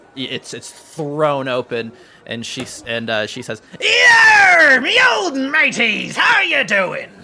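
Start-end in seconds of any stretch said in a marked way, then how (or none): 3.8-7.0 very loud, very high, shrill, hearty pirate voice. Voicing Jay greeting the party at the door: loud pirate-like greeting. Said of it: "you're so loud".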